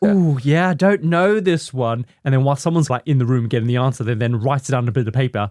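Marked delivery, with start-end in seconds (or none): 0.0-2.1 drawn-out, pitched-up, fake nervous hesitation. Retelling a phone-a-friend call from a room of helpers: imitating a caller faking nervousness. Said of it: "put you on speakerphone and they'll go".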